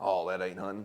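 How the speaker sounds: ordinary delivery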